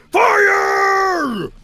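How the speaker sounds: put-on angry villain-style shout. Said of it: "his voice when he's being particularly mean or angry".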